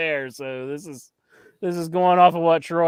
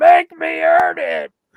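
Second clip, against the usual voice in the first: very high, loud, shrieking scream; 13 semitones higher, 7 dB louder than usual. Retelling a man being held back on Raw, imitating Cody Rhodes screaming. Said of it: "then he starts screaming".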